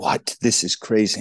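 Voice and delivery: acted-out, mock-stunned, disbelieving tone. Retelling hearing of a trade to St. Louis, retelling own stunned reaction. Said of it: "And I was like".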